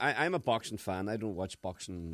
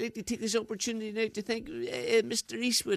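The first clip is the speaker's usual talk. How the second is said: put-on Irish boxer voice, higher pitch; 13 semitones higher than usual. Imitating a boxer thanking people after a fight: Barry McGuigan impression. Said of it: "he thanked everybody, didn't he?".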